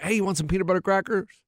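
ordinary delivery

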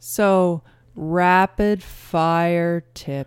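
very slow, drawn out. Introducing the rapid fire tips segment, said very slowly. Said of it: "I tried to say rapid fire as slowly as I possibly could".

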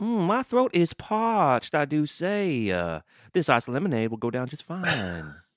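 swooping, high, sing-song cartoon rooster voice. Playing along in a bit about the socials: Foghorn Leghorn voice. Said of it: "you're trying to do the fucking chicken".

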